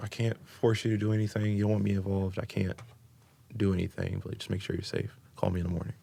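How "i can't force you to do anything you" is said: usual speaking voice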